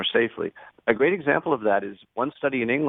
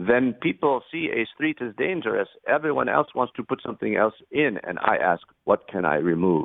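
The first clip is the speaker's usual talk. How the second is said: put-on German accent in English. Speaker quotes traffic engineer Hans Monderman, in his German accent. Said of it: "in his German accent".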